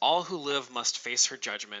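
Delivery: normal talking voice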